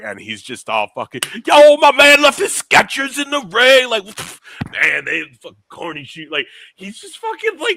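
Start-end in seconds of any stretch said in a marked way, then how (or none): 1.5-6.3 put-on very high, very loud, drunk yelling holler. Retelling a post show interview, imitating a drunk Jey Uso. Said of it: "fucking drunk".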